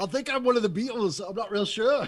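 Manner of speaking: odd, wonky, weird, fake put-on British accent. Joking with other players after being teased: weird put-on british accent. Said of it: "you got something weird going on there".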